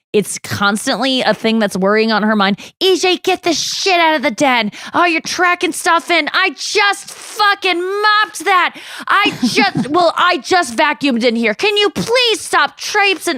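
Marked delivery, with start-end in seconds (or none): 2.8-13.3 high, exasperated, nagging mom voice. Describing how his mom always cleaned the house, the speaker imitates his mom. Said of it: "I can do my mom's impression so well".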